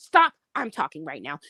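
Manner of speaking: mock disrespectful tone. Imitating men who talk to women: imitating rude, disrespectful talk. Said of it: "you talk to them disrespectfully and rude".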